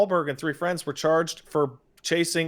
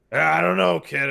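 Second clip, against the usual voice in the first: put-on classic Hollywood old man, old-school movie veteran voice. Showing how the character Sully sounds: classic Hollywood old man voice. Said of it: "Sully has such an obviously classic Hollywood old man voice".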